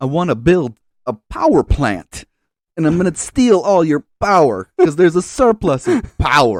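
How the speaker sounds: deliberately bad, loud, high, swooping put-on voice. Trying a self-admittedly bad impression after being asked: Christopher Walken impression. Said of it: "are you prepared to do your best Christopher Walken impression?".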